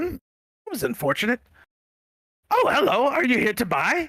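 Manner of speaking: very high, swooping, sing-song goblin voice. Voicing a goblin merchant who greets the players. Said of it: "an exactly identical goblin steps out of the hedge and goes".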